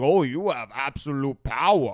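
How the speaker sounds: slow, weird joking voice. Retelling a man joking around on meeting E.T., in a weird voice. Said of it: "still talking in like Yoda's voice".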